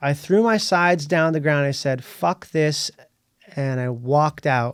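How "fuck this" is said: mock angry outburst. Retelling walking out of an audition after throwing sides down: retelling an angry outburst. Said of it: "I was so pissed off".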